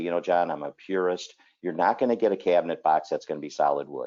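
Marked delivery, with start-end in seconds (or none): none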